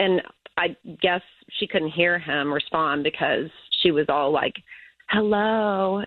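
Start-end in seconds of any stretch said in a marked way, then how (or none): 5.1-6.0 put-on, super flirty, playful come-hither voice. Retelling a woman's voice heard on the speaker: imitating a super flirty voice. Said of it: "in a super flirty voice".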